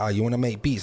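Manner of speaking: ordinary talk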